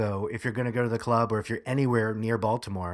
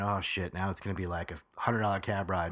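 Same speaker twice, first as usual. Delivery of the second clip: normal talking voice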